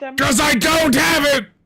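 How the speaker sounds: mock screaming. Answering a question on why the fire item is skipped: mock screaming. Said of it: "why are you screaming at me".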